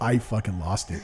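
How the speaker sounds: ordinary talk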